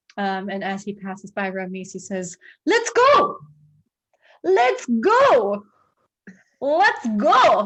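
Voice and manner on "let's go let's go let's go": very slow, swooping attempted Scottish accent, go stretched out. Player voicing Adrian as he passes Ramese toward the stairs, attempted Scottish accent. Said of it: "He attempts to say it in a more Scottish way".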